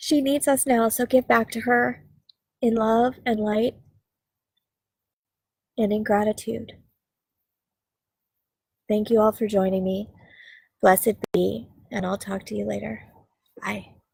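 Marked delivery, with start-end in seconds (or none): 0.0-6.7 teary, tearful, crying through the words. Closing out, thanking everybody for joining, crying while speaking. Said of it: "I'm crying".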